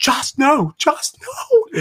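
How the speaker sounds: scream pitched way up and dragged out. Retelling how Georgia reacted when Joss was picked, imitating Georgia screaming. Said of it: "she's screaming, she goes".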